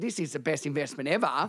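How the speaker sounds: ordinary talk, nothing marked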